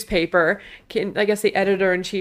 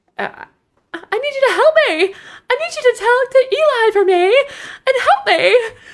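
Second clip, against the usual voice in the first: exaggerated, shrill, over-the-top, very high voice; 5 dB louder than usual. Retelling how a character asks for help: imitating a very high-pitched plea. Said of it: "Her voice goes to octave eleven".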